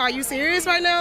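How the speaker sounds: ordinary delivery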